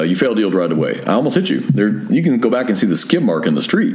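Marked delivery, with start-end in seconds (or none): none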